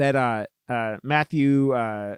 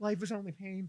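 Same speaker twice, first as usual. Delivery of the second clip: put-on higher, softer goth kid voice. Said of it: "goth kids from South Park".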